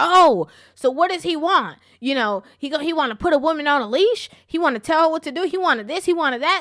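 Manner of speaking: put-on livid, furious, outraged voice. Retelling comments from upset women in the comment section: imitating livid women. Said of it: "women were livid".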